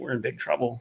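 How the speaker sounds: very low, hushed undertone. Recalling what congressional staff said in back rooms, the speaker retells it in a very low voice. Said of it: "in a very low voice said".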